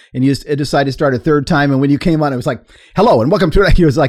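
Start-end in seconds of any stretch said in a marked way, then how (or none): 3.0-3.8 loud, forceful, emphatic, pitched-up voice. Imitating how the other speaker opened the show: imitating a forceful greeting. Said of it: "really forceful".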